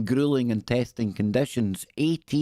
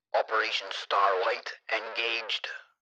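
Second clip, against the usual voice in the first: voice like a radio transmission; 5 dB quieter than usual. Reading aloud about a mission, the speaker breaks into a radio voice. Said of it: "it was meant to be a radio voice".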